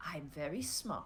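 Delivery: very quiet, hushed, sinister, diabolical villain voice. Voicing the unnaturally smart pet being discussed: evil, diabolical voice. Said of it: "evil, diabolical voice".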